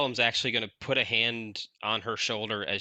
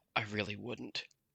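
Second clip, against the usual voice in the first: barely audible, private half-whisper; 9 dB quieter than usual. Playing a character who leans in to her and says this, half-whispering. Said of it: "a whisper so that it's not audible".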